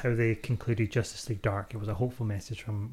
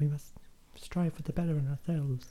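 pitched-up, hopeful, heroic-sounding voice; 5 semitones higher than usual. Mocking a hopeful film heroine's speech: imitating Wonder Woman. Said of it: "that's just Wonder Woman. Be like".

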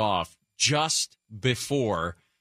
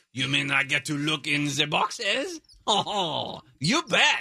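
exaggerated French accent; 5 semitones higher than usual. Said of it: "Way to be stereotypical".

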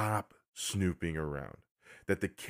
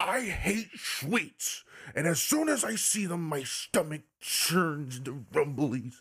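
mock, high, slow, drawn-out scolding; 6 semitones higher than usual. Retelling how a game character scolded the butler: imitating someone berating the butler. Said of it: "we can hear him berating the butler".

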